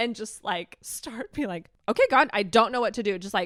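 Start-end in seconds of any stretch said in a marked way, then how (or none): 1.9-3.2 put-on raised, angry voice through gritted teeth. Retelling praying out loud in a corner as a parent: imitating angry praying. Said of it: "praying angrily".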